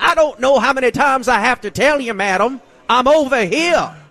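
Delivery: high, laughing, blustery, puffed-up voice.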